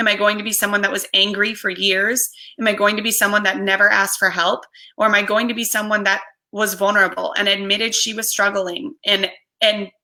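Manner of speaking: plain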